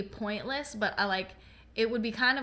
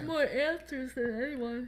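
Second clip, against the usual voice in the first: words stretched out, spoken through a yawn; 4 semitones higher than usual. Discussing a show character's connection to the upside down, yawning. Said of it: "Excuse me, I'm yawning".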